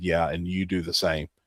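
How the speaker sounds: mock irritated, angry, pissed-off delivery. Retelling a driver's parting reply to a police officer: imitating an angry retort. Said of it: "she was fucking pissed".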